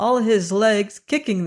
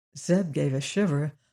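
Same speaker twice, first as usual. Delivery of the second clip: ordinary delivery, nothing marked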